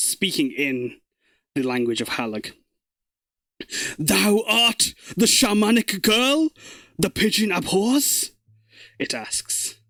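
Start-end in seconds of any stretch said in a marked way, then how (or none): 4.0-8.3 resounding, booming voice from somewhere within, pitched up. Narrating a tale, a voice from within speaks in Halag's language, booming voice from within. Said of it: "you can hear this voice booming from within".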